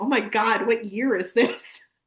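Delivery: put-on disbelieving line reading. Quoting a line from a video: imitating Thomas's line read. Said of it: "the line delivery of, of Thomas".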